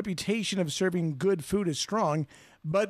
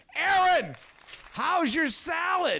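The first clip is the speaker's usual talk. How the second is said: shrill, very high-pitched shouting yell; 11 semitones higher than usual. In a dining scene, one diner addresses another, yelling. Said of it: "Would you stop yelling at me?".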